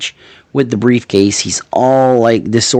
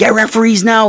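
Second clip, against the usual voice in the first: acted frantic, panicked, very high-pitched yell; 12 semitones higher than usual. Retelling a backstage call for referees: imitating a panicked yell. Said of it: "Like he's in panic mode".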